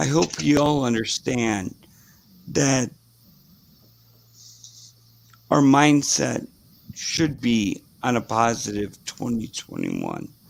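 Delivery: worn voice going hoarse, swooping. Making a toast to a positive year ahead: losing voice. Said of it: "I'm sorry I'm losing my voice".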